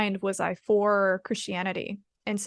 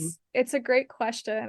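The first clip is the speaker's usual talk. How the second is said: speaking through laughter; 3 semitones higher than usual. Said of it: "I'm sorry I'm laughing".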